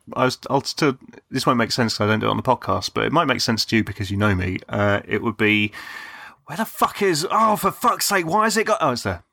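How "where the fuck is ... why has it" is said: very high-pitched, cursing, swearing rant. Doing an impression of himself searching for something: imitating his own swearing. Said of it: "that's my impression of myself".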